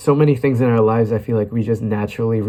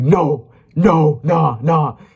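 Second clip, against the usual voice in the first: mock old man scream, much higher; 5 semitones higher, 3 dB louder than usual. Recalling a random old guy refusing to let a lost kid use his phone, retelling an old man's scream. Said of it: "he just like screamed at me like".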